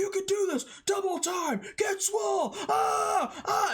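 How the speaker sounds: mock very high, in-your-face screaming yell. Speaker acts out a dude screaming in your face while lifting weights. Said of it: "he's like screaming in your face".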